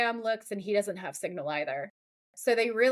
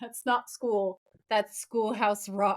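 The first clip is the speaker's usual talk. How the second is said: put-on tired exasperation. Retelling Sam's answer about history class: imitating Sam's long-suffering tone. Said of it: "And he's so long suffering".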